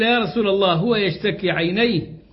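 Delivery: ordinary delivery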